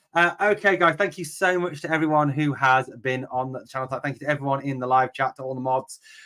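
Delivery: plain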